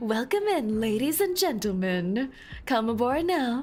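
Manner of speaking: put-on train station announcer voice. Joking after hearing another speaker's voice: put-on train announcer voice. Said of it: "your voice fits like an announcer".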